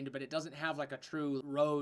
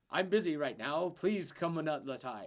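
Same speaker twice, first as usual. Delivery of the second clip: clearer voice with the rasp eased off. Voicing a pre-recorded message at a tower door: Belario's voice, less raspy. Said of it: "a less raspy voice than Belario's".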